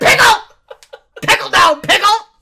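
shrill, very loud, high-pitched calling out. Imitating the other speaker calling out at the zip: imitating someone loudly calling. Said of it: "You're like".

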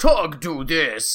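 loud caveman-style talk, blunt and simple. Describing the character Tug, speaker quotes him in Tug's caveman voice. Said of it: "he talks kind of like a caveman".

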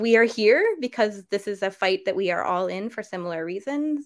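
normal talking voice

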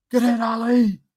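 very high, very loud cheering yell. Recalling yelling at a player's tackles from the crowd, retelling a yell. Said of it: "I was just yelling".

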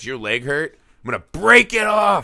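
mock feral, menacing, animalistic voice, rising pitch. Retelling a movie character's threat, imitating an animalistic threat. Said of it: "she's all fucking animalistic and she's like".

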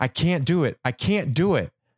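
high-pitched yell. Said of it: "I start yelling".

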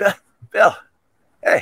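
easygoing, casual, breezy, no-big-deal tone. Showing again how Anthony leans in to greet: Anthony impression. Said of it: "that's how he does it".

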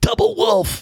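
high, angry, play-acted yell. Retelling how Lester, pissed, yelled before his shot: imitating Lester's angry yell. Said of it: "and he's pissed, and he's yelling".

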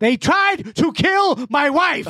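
jumps way up in pitch, dragged out slowly. Retelling a guest suddenly doing an impression in an interview: Denzel Washington impression. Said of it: "he just busts into Denzel Washington".

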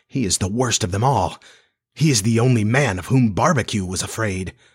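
plain

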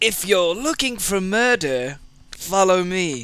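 wicked, sinister feline villain voice. Voicing a cat that would lead a burglar to murder: evil cat voice. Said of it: "That was like an evil cat voice".

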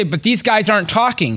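ordinary talk

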